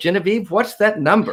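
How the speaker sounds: showy game show host voice. Host of a call-in show asks the co-host for the number, game show host voice. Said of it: "I sounded uh, frightening like a game show host".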